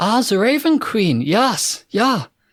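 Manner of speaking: put-on slow German accent. Voicing a priest who greets a worshipper of the Raven Queen: German accent. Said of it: "They both have German accents".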